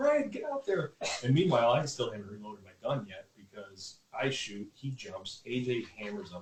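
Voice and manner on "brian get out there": very high-pitched yelling, way up in the voice. Retelling a hunt, imitating own past shout: retelling a yell. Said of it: "I'm yelling".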